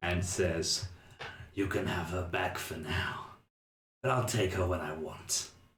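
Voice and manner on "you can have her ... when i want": low, purring, catlike voice. While you sit howling at the back, Grossman speaks: low cat-like purr. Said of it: "voice kind of lower and turn into this cat-like purr".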